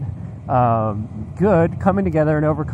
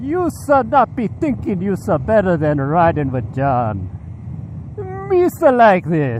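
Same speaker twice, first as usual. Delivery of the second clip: put-on character voice with pitch swinging widely; 4 semitones higher than usual. Addressing people who comment on their videos, Boss Nass impression. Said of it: "I'm gonna try to do my inver- impression of Boss Nass here".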